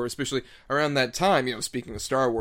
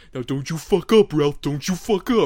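put-on stupid voice, higher and louder; 4 semitones higher, 8 dB louder than usual. Quoting a pig character voiced by Ralph Bakshi: Ralph Bakshi voice. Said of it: "who I just kinda love his stupid voice".

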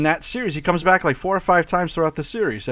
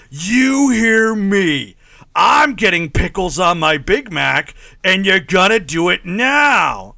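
put-on angry rant, slower; 2 semitones higher, 4 dB louder than usual. Imagining the actor berating a drive-thru worker, mock-angry Ronny Cox impression. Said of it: "I can only picture Ronnie Cox angry at people".

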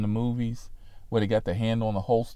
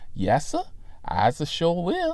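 heavily sarcastic, pitched-up, swooping, obliging sing-song; 7 semitones higher than usual. Retelling a stop by a deputy, the speaker quotes his own reply: Hoke impression. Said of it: "in my best Hoke impression".

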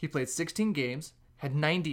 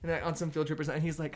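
usual speaking voice

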